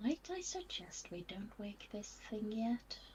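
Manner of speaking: very quiet, almost whispered voice. Near a snoring creature in the story, a character speaks almost in a whisper. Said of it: "really quietly, like almost a whisper".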